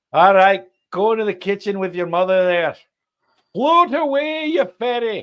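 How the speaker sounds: put-on loud, high-pitched voice in a Scottish accent. Retelling a scene from So I Married an Axe Murderer, in the Scottish dad's voice. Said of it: "Scottish character that Mike Myers did was the dad".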